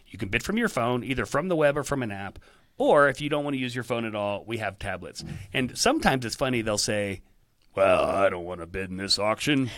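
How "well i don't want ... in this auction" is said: put-on cranky, put-out, grumbling voice. Explaining ways to bid, retelling what some people say: mock-grumpy voice. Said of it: "This is the grumpy voice".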